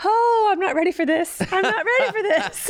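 very loud, very high-pitched outburst. Retelling what an older woman nearby said during a video, very loud. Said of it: "she very loudly goes".

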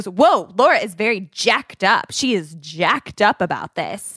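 slow, condescending, belittling drawl. Retelling a comment a man made about her layout plans, imitating a demeaning tone. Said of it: "the way he said it was kind of like demeaning".

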